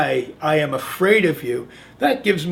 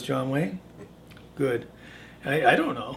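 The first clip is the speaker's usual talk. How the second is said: ordinary delivery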